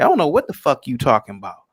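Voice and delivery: ordinary talk, nothing marked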